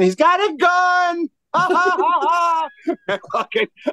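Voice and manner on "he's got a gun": high-pitched, slow scream mixed with laughter. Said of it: "I'm screaming".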